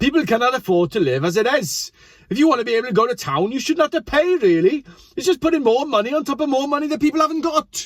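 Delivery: put-on Welsh accent. Reading out a quote from a parent named Katrina: put-on Welsh accent. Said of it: "Are we gonna go for the Welsh accent again?".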